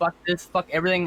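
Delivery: plain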